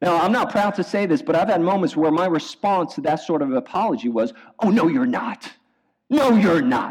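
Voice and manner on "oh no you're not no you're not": heated, fired-up, dismissive delivery. Retelling his past reply to an apology, retelling a heated retort. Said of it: "I'm still heated up".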